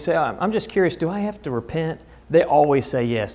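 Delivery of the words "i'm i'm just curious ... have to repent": very casual, offhand, nonchalant delivery. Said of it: "if you just do it real nonchalantly".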